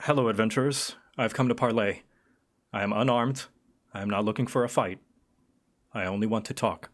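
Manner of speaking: distorted chorus of voices speaking at once. A narrator voicing a figure who comes to parley with adventurers, distorted multi-voice. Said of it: "voice distorted, as if there are several speaking at once".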